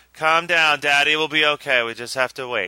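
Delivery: deadpan, flat, even monotone with no rise. Imitating a movie mother who stays calm while aliens terrorize her family; flat monotone. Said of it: "does not ever speak above a monotone".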